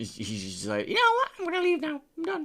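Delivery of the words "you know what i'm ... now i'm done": very high, stock sports commentator-style caster voice. Imitating an absent caster who left the training room: generic caster voice. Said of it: "that's Blood Minister's voice now".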